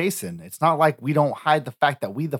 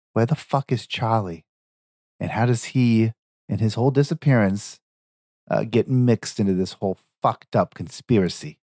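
stage whisper, loud; 4 semitones lower than usual. A game character leans into another's ear so everyone hears; loud stage whisper. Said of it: "I whisper into his ear really loud".

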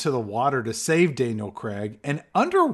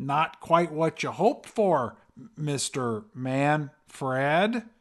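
bad, very slow, drawn-out American accent. Retelling a movie scene, speaker quotes Daniel Craig's line: Daniel Craig's bad American accent. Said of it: "It's a bad American accent".

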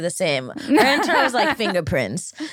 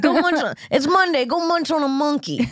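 put-on brash comedian voice, higher pitch; 7 semitones higher than usual. Trading impressions of Uncle Joey's greetings: Joey Diaz impression. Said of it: "You're really channeling Joey now".

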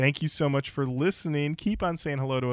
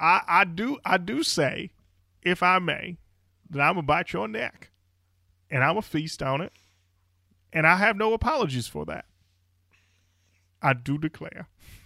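put-on cartoon rooster voice, higher; 3 semitones higher than usual. Pitching a vampire version of the cartoon rooster, Vampire Foghorn Leghorn voice. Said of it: "It's Foghorn Leghorn. He's a vampire".

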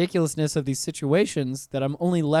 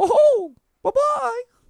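squeaked out loud and high; 6 dB louder than usual. Saying goodbye to people at the end, do a not very good Mickey Mouse impersonation. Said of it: "not a very good Mickey Mouse impersonation".

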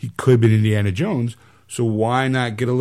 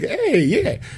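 squirrely, very high-pitched mobster wiseguy voice; 13 semitones higher than usual. Redoing an earlier voice bit: squirrely mobster voice. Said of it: "That was the squirrely mobster".

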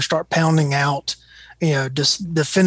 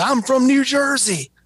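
mock, shrill, high, dragged-out screaming; 9 semitones higher than usual. Retelling an agitated driver's reply at the gas pump: imitating someone screaming. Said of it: "And he screams".

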